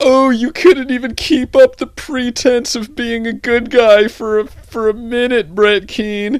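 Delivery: mocking whiny fan voice.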